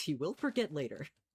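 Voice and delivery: put-on storybook narrator delivery. Planning a build out loud, commenting on himself in a mock narrator voice. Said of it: "Narrator voice".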